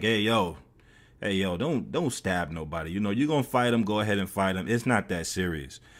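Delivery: plain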